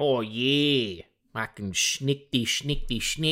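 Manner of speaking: rough put-on Australian accent, "yeah" drawn out long. Imitating the cartoon's Wolverine with an approximated Australian accent. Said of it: "someone trying to do an approximation of an Australian accent".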